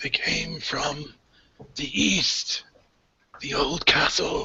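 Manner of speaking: slow, high, croaked words. Narrator voicing the crucified priest of the sun god, croaking priest. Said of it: "the stone doorway that's left of the temple of Amanator, the sun god, and you see that above that is crucified the priest, / and you see that above that is crucified the priest, and he kind of croaks".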